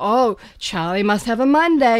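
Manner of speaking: ordinary delivery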